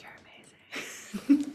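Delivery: soft, breathy, hushed whisper. Retelling what she says when meeting a musician: imitating own whisper. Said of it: "Always in a whisper, I'm like".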